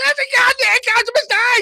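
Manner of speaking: piercing, shrill, very loud high screaming. Retelling what John said at halftime: imitating John screaming. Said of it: "He's screaming at everybody".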